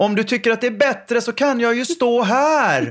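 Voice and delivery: very high-pitched shout. Retelling calling out from offstage to an unsure man on stage, retelling own shout. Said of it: "Och så skrek jag".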